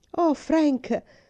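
high, excited exclamation. Marigold calls out to Frank from the carriage, exclaiming. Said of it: "Esclamò Marigold".

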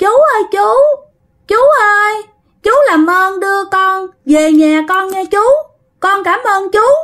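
put-on very high small-child voice, about three years old. Retelling what Thuận suddenly said, the speaker imitates Thuận's child voice. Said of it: "giọng con nít cỡ 3 4 tuổi".

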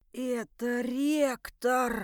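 whispering in horror, terrified. A committee member whispers to the narrator, horrified whisper. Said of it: "с ужасом прошептал".

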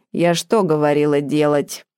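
plain reading voice

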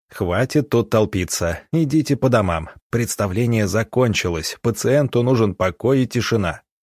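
usual speaking voice

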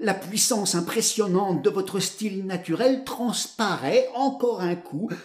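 ordinary delivery

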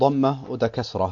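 ordinary delivery

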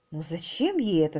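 plain

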